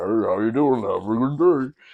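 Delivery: very deep, slow-motion drawl. Retelling a cashier-like stranger's greeting: imitating a very deep slow voice. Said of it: "me trying to imitate it".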